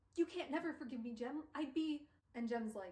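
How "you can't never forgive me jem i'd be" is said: mock desperate, panicky, pleading voice. Retelling a character's apology in a book: imitating a panicked plea. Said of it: "So he's panicking".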